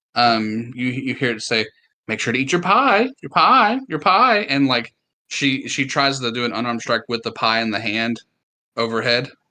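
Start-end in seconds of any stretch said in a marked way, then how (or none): 2.0-4.4 sweet, very high motherly voice. A game master voices spores speaking to a character, sweet motherly voice. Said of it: "in this very sweet, kind of like monthly voice".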